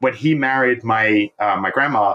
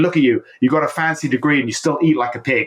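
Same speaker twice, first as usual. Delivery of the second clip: mock bitter, jealous, angry ranting tone; 3 semitones higher than usual. Telling of his dad's graduation lunch, the speaker acts out his grandfather screaming. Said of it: "He started screaming for him".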